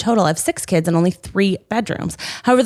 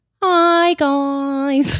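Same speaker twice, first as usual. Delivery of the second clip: put-on British accent, pitched up, "guys" drawn out; 6 semitones higher than usual. Starting to read a long post aloud when asked, in a British accent. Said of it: "In a British accent".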